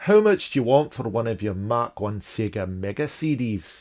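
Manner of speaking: terrible put-on Scottish accent. Reading out a question sent in by a listener, in a bad Scottish accent. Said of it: "That's a terrible accent".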